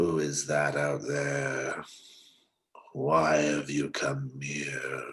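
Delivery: low, growly voice. A voice from the hut calls out to Slink, apart from the group: low, growly voice. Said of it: "the voice is a low, growly voice".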